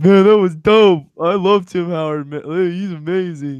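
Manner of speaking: put-on gushing teenage voice. Recalling being an Everton fan who loved Tim Howard, imitating his younger self. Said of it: "Did your voice change that much over the years?".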